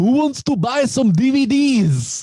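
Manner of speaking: put-on thick Eastern European accent, high-pitched. Recounting something watched where Z comes in, imitating Z's Eastern European accent. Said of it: "he's got this super like Eastern European accent".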